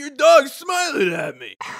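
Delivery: loud, high, sing-song hollered shout. Retelling how a hard-of-hearing dad called out to a stranger: imitating dad shouting. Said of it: "it sounds like he's shouting".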